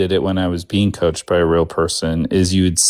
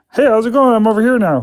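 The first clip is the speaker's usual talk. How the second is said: very high, far-off, distant ventriloquist thrown voice. Speaker demonstrates for a listener wearing headphones, in a thrown voice sounding far away. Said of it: "this is going to be me throwing my voice".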